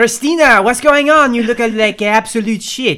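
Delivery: strong put-on French accent. Reading a scripted scene as Cheryl Krim, fifties: Cheryl Krim's powerful French accent. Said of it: "powerful French accent".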